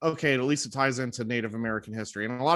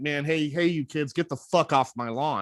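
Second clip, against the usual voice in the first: put-on crotchety, fed-up grumpy old man voice. Describing his past reaction to a video, imitating a grumpy old man. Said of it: "I was just an angry old grumpy man".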